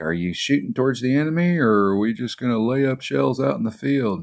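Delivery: high-pitched yelling bark, acted out. Retelling how a company commander reacted to a first shot: imitating a commander yelling. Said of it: "started yelling at me like".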